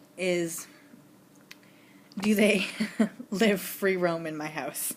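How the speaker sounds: slow speech through giggles. Putting another question you find so funny, giggling. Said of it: "I'm giggling because I think it's so funny".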